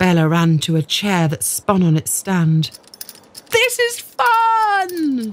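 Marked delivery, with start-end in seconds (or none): 3.5-5.3 very high-pitched shout, stretching out "fun". Bella, spinning in circles on a chair; yelling. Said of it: "she yelled".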